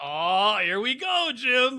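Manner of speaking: loud, high, slow, drawn-out broadcast-style announcing. Quoting memes about the announcer's arrest: Tony Romo announcing voice. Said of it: "He's like".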